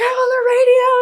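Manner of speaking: put-on shrieking freak-out, very high and stretched. Retelling calling their sister while alone, retelling own screaming. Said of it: "And I'm like screaming".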